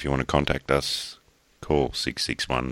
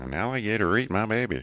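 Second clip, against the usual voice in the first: put-on Southern twang accent, higher pitch; 7 semitones higher than usual. Asking someone to say it with a southern twang, the speaker shows it: southern twang accent. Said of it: "Can you say it with like a southern twang?".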